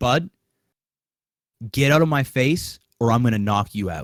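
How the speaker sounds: mock, menacingly calm, scary tone. Retelling how the father warned him, imitating a scary calm threat. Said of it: "scary calm".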